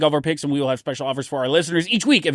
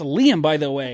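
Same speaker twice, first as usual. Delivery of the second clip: usual speaking voice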